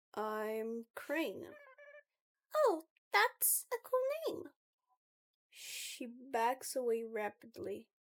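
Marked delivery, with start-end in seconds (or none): 2.5-4.4 very high-pitched character voice. Narrator voices Chrissy meeting the new crafting club member, in Chrissy's very high-pitched voice. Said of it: "very high pitched voice".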